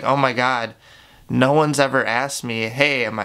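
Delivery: normal talking voice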